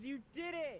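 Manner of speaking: very high, loud, condescending, patronizing cheer. Cheering another player's hit: condescending praise. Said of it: "That feels condescending".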